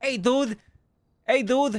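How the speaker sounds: slow, drawn-out character voice. Showing how a man named Low Tugs talks, imitating Low Tugs' voice. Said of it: "he talks like this".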